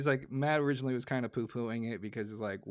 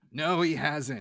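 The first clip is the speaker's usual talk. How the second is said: mock-angry, acted angry tone; 3 semitones higher, 5 dB louder than usual. Recapping a cartoon episode, quoting a character's reply, retelling an angry reply. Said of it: "in the most angry tone".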